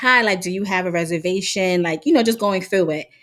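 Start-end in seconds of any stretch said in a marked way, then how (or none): 0.0-1.8 sweet, very nice, courteous polite tone. Retelling a waitress asking a seated man about a reservation: imitating her speaking very nicely. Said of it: "the waitress comes up very nicely and is just like".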